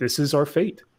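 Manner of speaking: ordinary talk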